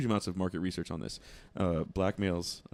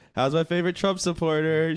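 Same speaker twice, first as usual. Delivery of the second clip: shrill, booming, loud, high-pitched shouted call-out; 10 semitones higher, 10 dB louder than usual. Retelling a greeting at a gas station: imitating someone saying it loudly. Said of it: "She said the shit real loud".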